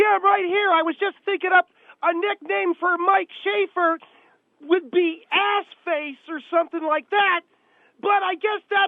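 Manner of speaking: loud screaming, as if into a phone. Answering the host on a call-in line, screaming into the phone. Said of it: "What are you screaming for".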